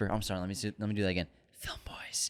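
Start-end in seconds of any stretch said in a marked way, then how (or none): 1.6-2.3 soft, breathy, hushed whisper, barely there. Reading a listener review aloud, redoing the quoted line: soft whisper. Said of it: "I softly whisper".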